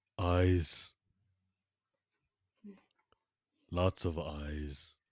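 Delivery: very slow, deliberate character voice. Voicing King Shark as he points at the player's face: King Shark voice. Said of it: "He points at your face and he says".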